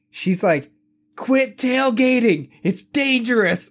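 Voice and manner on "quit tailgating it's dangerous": very high-pitched, shrill scolding shout. Recounting pulling up beside a car, quoting the lady, retelling her yell. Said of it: "this fucking lady is yelling at me".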